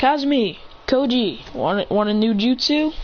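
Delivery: plain reading voice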